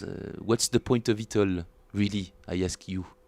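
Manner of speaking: thick, exaggerated put-on French accent. Bass player showing how silly his accent sounds when exaggerated, exaggerated French accent. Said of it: "If I exaggerate my accent".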